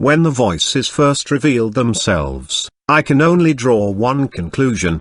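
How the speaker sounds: ordinary delivery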